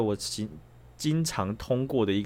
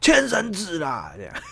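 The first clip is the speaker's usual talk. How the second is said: mock yell, loud, high, very slow and stretched; 7 semitones higher, 5 dB louder than usual. Retelling what they yelled after rolling down the car window, retelling a big shout. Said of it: "直接大吼".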